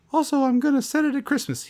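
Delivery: very high, squeaky cartoon mouse voice. Imitating the director announcing a Christmas setting: Tim Burton impression sounding like Mickey Mouse. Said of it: "He sounds like Mickey Mouse in this impression".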